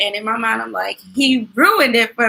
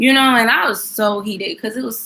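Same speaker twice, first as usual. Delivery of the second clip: normal talking voice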